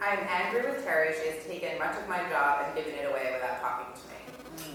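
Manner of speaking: usual speaking voice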